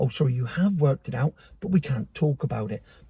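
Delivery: hushed, secretive half-whisper. Saying something people supposedly can't talk about: half-whispering. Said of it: "Don't know what I'm fucking whispering".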